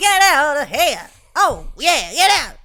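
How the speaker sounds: high, theatrical vaudeville-style shouted outburst. Speaker imitates how the other person shouted at home, imitating a vaudevillian shout. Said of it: "you sounded like a like a vaudevillian performance".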